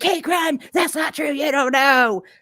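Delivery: mock shouting, hard, high-pitched yell. Retelling what another person yelled at the speaker: imitating someone yelling. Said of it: "She was yelling at me".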